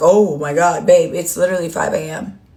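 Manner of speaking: acted giggly speech broken by laughter. Mocking someone who watches at five A M: imitating someone laughing. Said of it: "and then laughing like".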